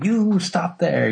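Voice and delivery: put-on Scottish accent, called out high. Retelling a judge catching a thief at a tournament: James Elliott's Scottish accent. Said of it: "his Scottish accent".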